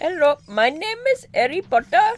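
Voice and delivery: half British, half Indian accent. Trying to hold an accent halfway between British and Indian; halfway British-Indian accent. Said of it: "master of the halfway between accent".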